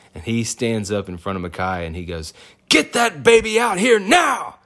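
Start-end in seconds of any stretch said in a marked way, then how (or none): 2.6-4.4 mock-urgent, heated, very loud, very high shouting. Retelling how the doctor suddenly ordered the baby out: imitating a heated order. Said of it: "gets really, um, heated for a second".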